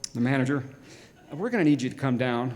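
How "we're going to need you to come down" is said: put-on very serious voice, lower. Retelling a phone call from the store manager: imitating a very serious manager. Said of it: "very serious".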